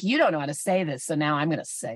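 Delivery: fast, low, condescending know-it-all tone. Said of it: "She sounds like she's like".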